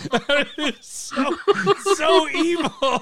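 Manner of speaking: slow, high laughter through the words.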